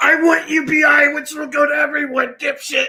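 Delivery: very high, all-caps shouting rant. Telling friends about an online reply they got, acting out an all-caps reply. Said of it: "the next reply I got was all caps".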